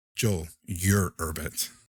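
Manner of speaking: plain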